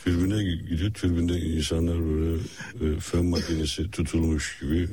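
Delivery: halting, mimicked delivery. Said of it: "Hacı Osmanoğlu taklidi".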